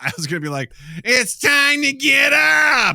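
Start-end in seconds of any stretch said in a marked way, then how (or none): 1.0-3.0 very high, loud, slow, drawn-out belted call. Trying out a wake-up call voice for the others. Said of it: "it sounds like someone from Pee Wee Herman".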